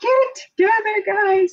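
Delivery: strict, stern yell, very high-pitched. Retelling how the strict teacher yelled at the goofy teachers: imitating someone yelling. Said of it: "yelling at them".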